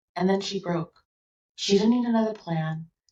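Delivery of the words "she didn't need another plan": ordinary talk, nothing marked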